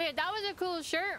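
speaking through full mouth. Chatting with the boys while eating, talking with mouth full. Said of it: "I'm talking with my mouth full".

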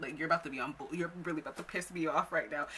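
ordinary talk

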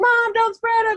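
very high-pitched put-on calling-out yell. Recapping a tv episode scene where her dad's ashes are spread, retelling a yell. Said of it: "She's like yelling".

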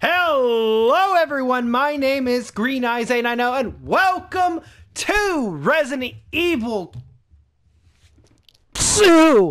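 way too excited, loud and high-pitched. Greeting everyone and welcoming them to the game: overly excited. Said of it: "I went a little too excited".

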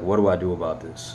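normal talking voice

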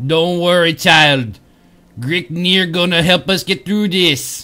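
clumsy, bad put-on troll accent. Playing a game, voicing a quest character's line in a bad troll accent. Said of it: "Bad troll accent incoming".

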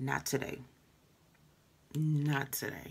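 ordinary talk

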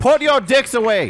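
firm, commanding, authoritative delivery. Showing another player how to give an order with authority. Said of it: "that's how you say it with some authority".

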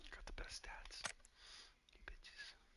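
soft whispered taunt. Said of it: "you gotta whisper that".

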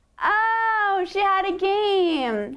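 slow, high, drawn-out sarcastic mocking tone.

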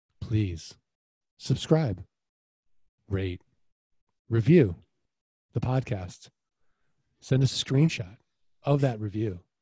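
very hypnotic, suggestive, trance-like voice. Podcast host's reminder to listeners, said in a very hypnotic voice. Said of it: "I'm going to say it in a very hypnotic voice".

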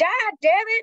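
shrill yelled outburst at very high pitch. Voicing the character Edie in a fight: yelling out in character. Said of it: "Edie just yells out".

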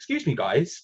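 mock polite on top, disapproving and challenging underneath. Retell a security guard coming straight towards you and your companion, imitating his fake-approachable challenge. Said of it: "in the sort of tone which says".

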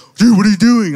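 high-pitched, loud, shocked yell.

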